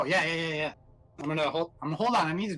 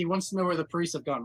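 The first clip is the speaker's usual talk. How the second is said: usual speaking voice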